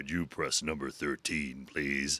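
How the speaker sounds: deep, soft radio announcer delivery. Retelling what a stranger in a lift said, in a deep radio voice. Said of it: "like a deep radio voice".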